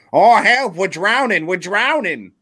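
shrill, loud, put-on New England accent. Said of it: "Rhode Island, Maine accent".

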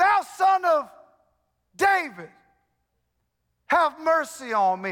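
pleading, begging tone. Speaker retells how a blind beggar cries out to Jesus, retelling a yelled plea. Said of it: "he's yelling".

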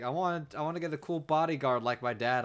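acted disappointed, innocent, sad little-kid voice. Retelling a child character's line at a toy machine: imitating a sad child. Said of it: "He's sad about the gangster".

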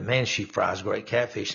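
normal talking voice

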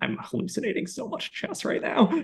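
soft, hushed whisper under the breath. Retelling a remark to a girlfriend during a boring movie: imitating own whisper. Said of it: "I whispered to my girlfriend".

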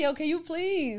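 put-on Caribbean accent. Joking about a caribbean church, acting out their own reply: put-on caribbean accent. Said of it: "I'm like in that accent".

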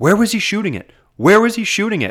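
very high-pitched furious, irate screaming. Retelling what an irate fan kept yelling over the broadcast: imitating an irate fan screaming. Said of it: "one very irate fan just screaming".

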